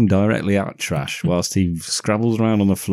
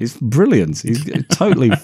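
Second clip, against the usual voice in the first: ordinary talk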